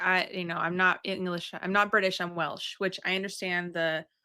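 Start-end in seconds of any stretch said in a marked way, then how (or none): none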